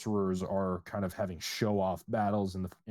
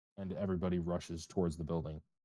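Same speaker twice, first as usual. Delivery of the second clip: ordinary talk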